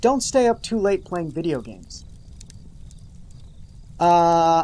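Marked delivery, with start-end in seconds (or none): none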